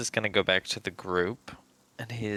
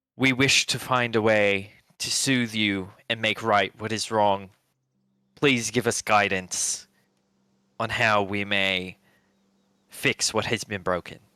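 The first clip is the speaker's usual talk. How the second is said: magically amplified booming voice, louder; 5 dB louder than usual. Praying to a sea god in character, magically amplified booming voice. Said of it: "make his voice louder and be like".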